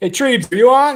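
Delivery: loud, high-pitched shout. Calling out to Treebs to ask if he is on, yelling. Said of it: "Why did I yell?".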